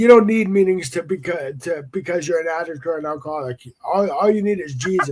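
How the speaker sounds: ordinary delivery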